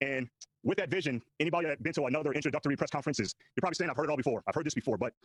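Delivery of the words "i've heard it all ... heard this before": plain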